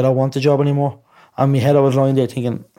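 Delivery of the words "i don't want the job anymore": usual speaking voice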